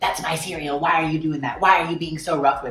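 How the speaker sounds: rude, outraged, angry outburst, freaking out. Retelling a customer freaking out at a coworker bagging her stuff, mock-angry outburst. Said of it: "she just like freaked out at him".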